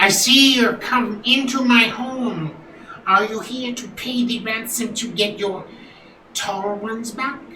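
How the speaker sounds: pompous, high goblin chief voice. Voicing the goblin leader as visitors come to pay a ransom; goblin chief voice. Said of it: "I am a very smart and great leader of this goblin tribe. / Hark, gets up, he's like, / I am a very smart and great leader of this goblin tribe".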